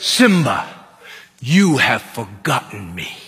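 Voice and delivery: big, very deep, fatherly voice. Retelling the scene where Mufasa speaks to Simba, in a big Mufasa voice. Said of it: "The Mufasa had that big voice".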